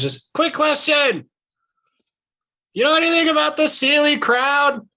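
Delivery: all-out, very high, top-of-lungs shrieking yell. Calling a question after the departing figure, yelling at the top of your lungs. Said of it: "just like yelling at the top of my lungs".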